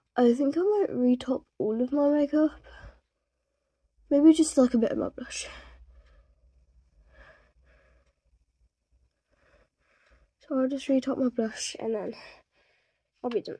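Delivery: out of breath, winded. Redoing makeup on camera after running up the stairs, out of breath. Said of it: "I'm out of breath because I just ran up the stairs".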